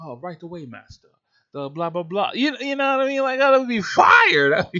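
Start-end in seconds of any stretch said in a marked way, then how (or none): 0.0-2.3 put-on, soft, quiet servant-style butler voice. Imagining an assistant answering a request for Bitcoin news, in a butler-type voice. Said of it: "you gotta give me a butler type voice".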